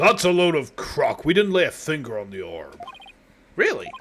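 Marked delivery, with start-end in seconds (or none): 0.0-2.8 voice pushed down to very deep bottom register. Voicing a game character to match Jameson Price, in a deep booming voice. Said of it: "very deep, booming voice, so I'm attempting to match it".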